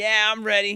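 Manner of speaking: high, loud yelling. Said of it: "he's just yelling back at him".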